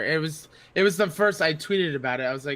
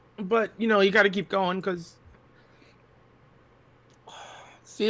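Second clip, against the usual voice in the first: choking up, fighting back tears; 5 semitones higher than usual. Guest talking about what keeps them going, choking up. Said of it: "I knew I was gonna cry".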